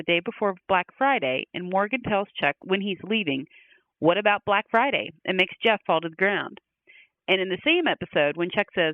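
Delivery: ordinary delivery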